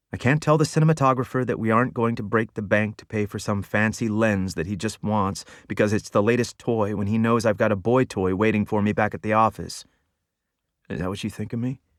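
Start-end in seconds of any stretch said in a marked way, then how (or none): none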